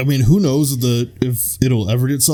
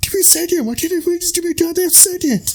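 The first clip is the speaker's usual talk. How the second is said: put-on Boston accent, higher. Retelling a movie scene with people asking questions: Mark Wahlberg impression. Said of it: "Mark Wahlberg's just like".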